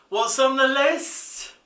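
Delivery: bad Liverpool accent, high and slow. Asking another speaker what's on the list: awful slightly Liverpudlian accent. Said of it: "don't do that awful, slightly Liverpudlian accent".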